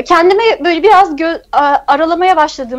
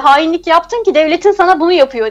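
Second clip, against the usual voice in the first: ordinary talk, nothing marked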